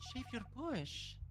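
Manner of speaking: compassionate, sympathetic, consoling delivery. In an acting game, asked to say the line with sympathy; sympathetic.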